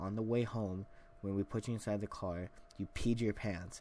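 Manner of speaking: ordinary delivery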